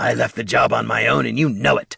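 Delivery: rough temper straining against restraint. Bert replies to Katha: barely holding back temper. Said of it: "Bert was trying to hold back his temper and clearly failing".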